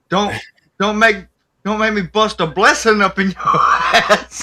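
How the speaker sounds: tough gangster voice. Imagining a gangster nun saying this, speaking in a gangster nun voice. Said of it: "a gangster nun saying that".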